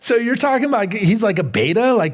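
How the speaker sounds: mock incredulous tone.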